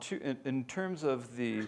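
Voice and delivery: ordinary talk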